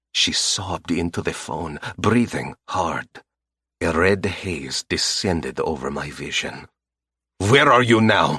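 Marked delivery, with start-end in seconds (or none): 7.4-8.4 sharp, loud, demanding bark. Reading a story where the narrator demands a location on the phone: barked question. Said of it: "I barked".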